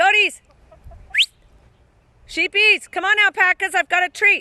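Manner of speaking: shouting. Calling the animals over with a treat, yelling. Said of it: "Sorry, I'm yelling in everyone's ear".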